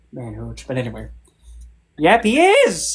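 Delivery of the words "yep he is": high, loud voice cracking mid-line. Insisting about a husband being a two-timer, voice cracking. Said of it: "the voice crack".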